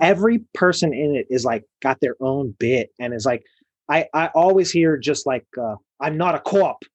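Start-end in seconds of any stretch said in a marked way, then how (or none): 6.0-6.7 put-on over-the-top Boston accent. Quoting a line from The Departed: over-the-top Boston accent. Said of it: "the most ridiculous, over-the-top Boston accents".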